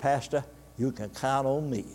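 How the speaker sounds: put-on strong Cajun accent. A pastor quotes a woman's reply to his request, in a strong Cajun accent. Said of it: "she spoke with a strong Cajun accent".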